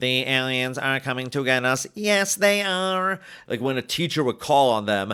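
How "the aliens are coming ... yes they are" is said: slow, mechanical, robotic computer-like voice. Retelling how movie nerds talked like computers: imitating a robotic computer voice. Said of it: "Talking like this".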